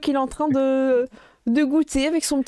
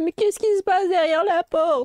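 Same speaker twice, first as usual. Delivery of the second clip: put-on small, high-pitched little old-lady voice; 5 semitones higher than usual. Narrator voices someone speaking behind a door, in Mamie Meringue's old-lady voice. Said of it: "vous entendez une petite voix de vieille dame".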